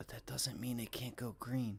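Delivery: sudden whisper. Commenting that a stock could still turn green, whispering like Biden. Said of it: "I just whispered like Biden".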